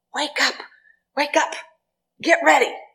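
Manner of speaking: big, loud voice, pitched high. Speaker retells a man's morning wake-up call to the household, mimicking a large, loud voice. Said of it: "his voice was large and loud".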